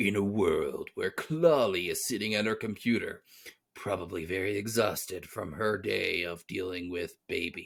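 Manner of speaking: deep, dramatic, epic movie-trailer narrating voice. Bringing back an old bit, narrating about Clawley in a deep epic voice. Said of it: "my deep epic voice".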